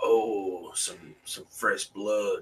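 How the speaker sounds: very slow, hushed, creepy drawling voice. Comparing movie sequels, recalling the creepy guy at the start: creepy guy voice.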